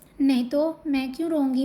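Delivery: ordinary delivery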